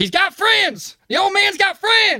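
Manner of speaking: very high yell, rising in pitch to the end. Voicing an opponent grappling in a fight: character yelling out. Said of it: "he is kind of yelling out".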